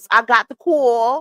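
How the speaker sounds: slow, fake, put-on affected way of talking. Repeating a clip's line, mimicking her odd put-on way of talking. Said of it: "she don't talk like this".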